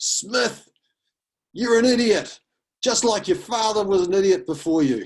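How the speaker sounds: very high, very loud, shrill, acidic booming bellow. Recalling a veteran teacher calling out to a student across the quad: retelling a booming call. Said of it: "a booming voice from one of the veteran teachers".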